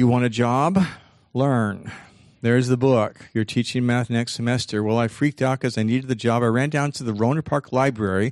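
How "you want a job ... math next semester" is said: ordinary delivery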